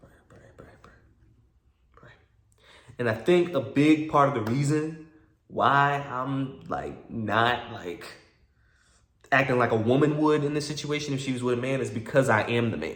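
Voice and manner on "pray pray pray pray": soft, whispered, under the breath. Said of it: "I'm just praying".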